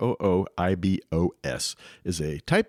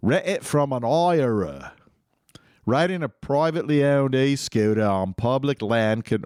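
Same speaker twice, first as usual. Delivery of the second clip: unplanned, put-on English accent slipping into speech; 4 semitones higher than usual. Reading scooter rules aloud and slipping into an accent. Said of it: "why did I slip into that accent?".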